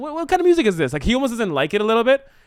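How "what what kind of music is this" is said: high, puzzled tone. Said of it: "he says, like".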